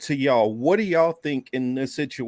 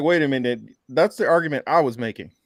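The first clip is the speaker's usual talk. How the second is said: usual speaking voice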